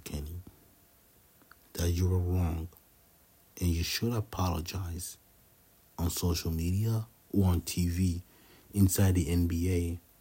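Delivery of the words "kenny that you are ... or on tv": low voice, taken down a notch. Addressing Kenny Smith directly, in a lowered voice. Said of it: "this is me lowering my voice to you".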